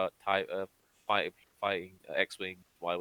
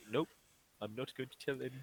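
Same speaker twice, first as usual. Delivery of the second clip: put-on Kiwi accent, higher and quieter; 6 semitones higher, 6 dB quieter than usual. Imitating Taika Waititi as Korg, keeping secrets: Korg voice. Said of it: "Taika Waititi's like".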